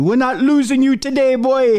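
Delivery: put-on very high, shrill yelling in a Jamaican accent. Retelling a hospital scene in which a nurse shouts at the speaker, in a Jamaican accent, yelling. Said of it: "there's a Jamaican nurse".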